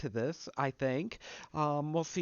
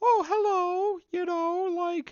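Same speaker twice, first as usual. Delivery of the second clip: poor, very high cartoon falsetto voice; 4 dB louder than usual. Speaker demonstrates the falsetto they want to avoid: bad falsetto cartoon voice. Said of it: "this is gonna be falsetto".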